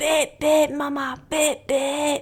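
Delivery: put-on high, slow small child's Scottish accent. Speaker acts out him beeping during his favourite game, in little scottish accent. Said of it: "in his little Scottish accent".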